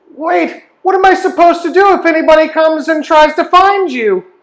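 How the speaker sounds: put-on very high whiny child voice. Narrating a scene, the speaker voices a small child calling after an older man, whiny child voice. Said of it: "Do I sound whiny like this little kid?".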